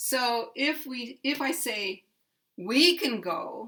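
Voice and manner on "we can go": heavy stress on we. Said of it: "putting very big stress on we".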